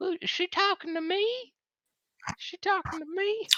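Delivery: put-on very high-pitched old man voice. A speaker voices his penis hearing its name called, Herbert old-man voice. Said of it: "Why is your penis old?".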